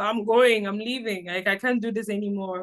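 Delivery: ordinary delivery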